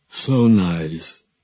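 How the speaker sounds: wet, waterlogged, gurgling, gargled voice. Narrating what a voice from a closet says, wet, seaweed-choked voice. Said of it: "as if they might have come through a mouthful of rotted seaweed".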